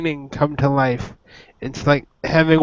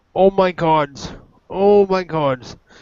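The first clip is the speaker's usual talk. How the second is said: agitated, overwhelmed, worked-up, reeling outburst; 3 semitones higher than usual. Having just met their avatar for the first time, the character is overwhelmed and worked up.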